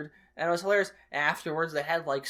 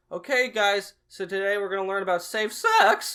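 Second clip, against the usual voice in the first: voice breaking mid-line, pitched up, raised; 5 semitones higher, 6 dB louder than usual. Retelling the soccer coach starting a class, imitating Coach Hanner's cracking voice. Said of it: "his voice cracked a lot of times".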